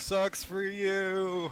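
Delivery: very high yell with a drawn-out "you". Taunting a burning werewolf in the game: yelling back. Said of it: "I yell back".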